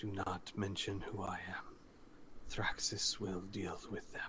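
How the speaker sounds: said close and quiet, hushed, for nearby ears. Narrator voicing a rarely speaking character addressing two others nearby: quiet. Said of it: "says quietly".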